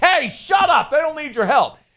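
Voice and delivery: put-on angry yelling, very high and heated. Retelling what was shouted at a player during practice, retelling a yell. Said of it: "Brian Kelly yells at him like".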